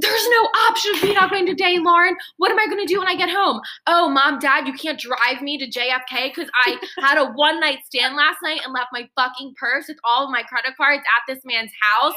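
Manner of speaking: mock screaming. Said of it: "And so I'm screaming".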